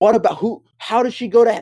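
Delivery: bewildered rant. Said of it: "And I'm like".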